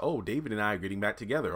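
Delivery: plain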